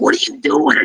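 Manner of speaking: angry tone, anger held back. Retelling how Mark shouted at a woman, retelling Mark yelling. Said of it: "He was yelling at her".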